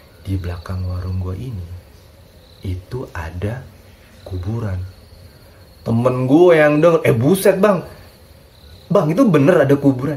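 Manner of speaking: unhurried and toned-down way of talking. Retelling a stall owner telling of a grave behind his stall, soft slow speaking. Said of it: "ini agak pelan ini ngomongnya".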